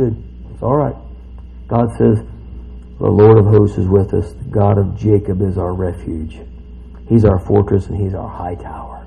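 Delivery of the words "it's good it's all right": soothing, soft, breathy, calm, reassuring. Reading through a scripture chapter aloud to listeners: calm voice. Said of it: "Calm voice".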